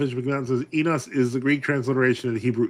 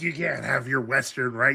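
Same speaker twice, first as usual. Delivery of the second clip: sour, grudging, salty, bitter retort; 4 dB quieter than usual. Imitating a speaker who rejects the western rite: imitating someone salty. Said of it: "He's salty".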